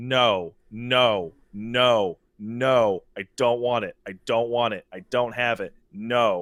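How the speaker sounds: dry, flat, expressionless deadpan. Retelling answering a guy's repeated offers, retelling a deadpan refusal. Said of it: "every single time was just a deadpan".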